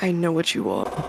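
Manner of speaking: close, hushed, right-at-your-ear delivery. Telling others what a guy might say, imitating a guy leaning into ear. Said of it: "lean into my ear and be like".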